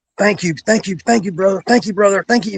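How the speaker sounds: imitated raspy man's voice. Recalling a man patting him on the chest to thank him, raspy voice. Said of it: "that raspy voice".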